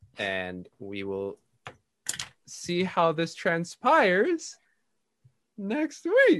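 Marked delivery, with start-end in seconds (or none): 5.6-6.4 high voice breaking and cracking over the words. Game master ending the session after the dice rolls, voice cracking. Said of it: "his voice cracking".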